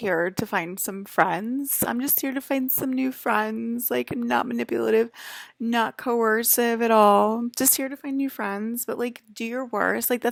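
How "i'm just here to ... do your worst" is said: play-acted sugary, sarcastic, bubbly sunshine voice. Mocking someone's cheerful claim of wanting friends: mocking bubbly sunshine voice. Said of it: "Miss Bubbly Sunshine".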